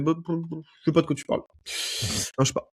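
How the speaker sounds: mock, breathy, innocent, playing-dumb mumble. Retelling what the county sheriff said: imitating the sheriff playing dumb. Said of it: "le shérif du comté l'a fait".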